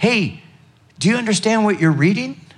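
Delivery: play-acted high shout, called across a distance. Retelling the story of Philip running beside a chariot: acting out a shout. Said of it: "he shouts out to this man".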